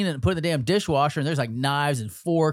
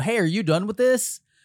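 play-acted, pointed, pitched-up passive-aggressive tone; 6 semitones higher than usual. Retelling what they say to roommates: imitating own passive-aggressive tone. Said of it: "this super passive aggressive asshole thing".

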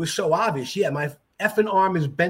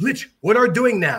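broken English phrasing, prepositions and little words dropped; 3 semitones higher, 5 dB louder than usual. Retelling how Master Bai spoke, dropping prepositions: imitating Master Bai's broken English. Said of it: "the man never used preposition".

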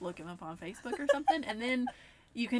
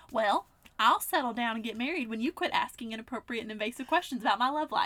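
put-on Southern accent laid on double, extra thick; 4 dB louder than usual. Reading out a snarky reply to a nosy question: exaggerated Southern accent. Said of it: "double as Southern as you were the rest of the time".

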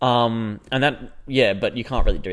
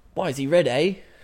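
put-on New Zealand accent, higher; 6 semitones higher than usual. Retelling people throwing rocks and mocking his red hair: put-on new zealand accent. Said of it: "just like in the New Zealand accent".

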